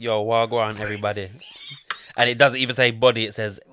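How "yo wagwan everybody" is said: put-on Jamaican patois accent, easygoing. Asked for the intro in Jamaican patois, the speaker delivers it: Jamaican patois accent. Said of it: "here's the intro in Jamaican patois".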